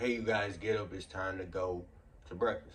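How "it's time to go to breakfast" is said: normal talking voice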